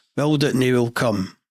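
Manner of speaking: ordinary talk, nothing marked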